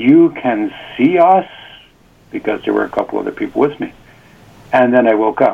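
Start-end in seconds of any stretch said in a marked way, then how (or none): 0.0-1.5 mock very slow, drawn-out, astonished voice. Retelling a dream, repeating what they said to a man, retelling a surprised question. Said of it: "in a surprised tone".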